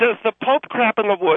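ordinary talk

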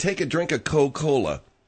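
ordinary delivery

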